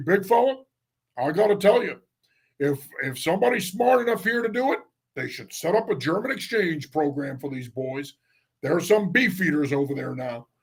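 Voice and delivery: put-on Midwestern drawl tinged with a Colorado accent. Retelling what a man who called him big fella used to say, imitating a midwestern drawl. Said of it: "with his Midwestern drawl, his Colorado accent".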